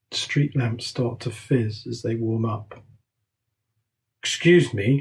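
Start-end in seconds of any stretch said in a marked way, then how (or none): 4.2-5.0 most authoritative, commanding voice possible. Reading a story, the narrator speaking to policemen: authoritative voice. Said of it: "in the most authoritative voice I can muster".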